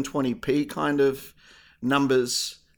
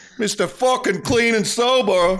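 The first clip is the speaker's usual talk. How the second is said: loud, high-pitched, put-on New York accent; 7 semitones higher, 5 dB louder than usual. Joining the other speaker's teasing bit, in a put-on New York accent. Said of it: "I did the accent uh, really well".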